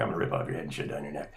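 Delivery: very deep, rough, gravelly, fast, menacing low voice. Speaker retells doing the requested line in a gravelly voice. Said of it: "like in a gravelly voice. So I, I did it".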